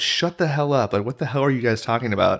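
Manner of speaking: put-on annoyed outburst. Retelling telling friends to stop quoting a movie: imitating own annoyed outburst. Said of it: "I was so annoyed".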